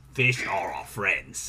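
really gruff, deep, rumbling put-on voice. Asked if he's being Bruce from Finding Nemo, the speaker quotes him in a Bruce from Finding Nemo voice. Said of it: "being Bruce from Finding Nemo".

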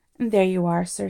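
plain

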